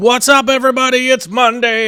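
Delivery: very high, loud, high-pitched hollered yell. Podcast host opening a late Monday show, yelling into the microphone. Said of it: "I'm yelling into the microphone. Sorry about that".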